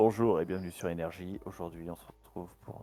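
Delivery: very low, deep, sensual late-night radio host voice. Asked by the other speaker for a sensual voice, doing a late-night radio host voice. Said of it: "C'est ma voix euh, d'animateur radio, tu sais, après minuit".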